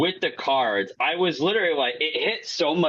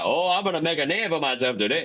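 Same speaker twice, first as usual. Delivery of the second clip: goofy put-on Cajun accent. Retelling a movie scene, quoting the character's line: goofy Gambit accent. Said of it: "His accent was goofy".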